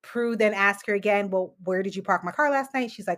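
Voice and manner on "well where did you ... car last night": ordinary talk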